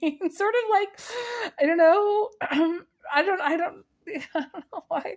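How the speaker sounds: high, laughing giggle. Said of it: "I'm laughing".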